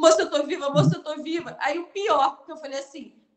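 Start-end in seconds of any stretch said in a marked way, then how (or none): 0.0-1.6 panicked pleading, higher and louder. Retelling being trapped in a train cabin: imitating own panicked pleading. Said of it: "eu tava tão em pânico".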